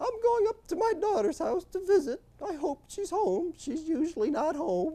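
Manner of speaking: put-on squeaky, high, little old-woman voice. Storyteller voicing an old woman answering the two men who helped her, squeaky voice. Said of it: "with a squeaky voice".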